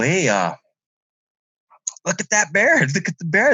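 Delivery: mock-startled, high, swooping freaked-out yell. Retelling seeing a bear, re-enacting yelling out to another person. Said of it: "I'm yelling to Angelo".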